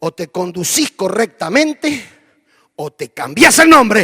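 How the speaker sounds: stern, loud, commanding military general's voice. Retelling how a commander rebuked a soldier: commanding general's voice. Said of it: "con una voz así de general".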